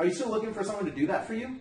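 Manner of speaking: pitch rising at the end, on "for you". Acting out a phone call about a Craigslist ad: rising pitch at question end. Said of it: "at the end of this question, kind of elevate your voice a little bit".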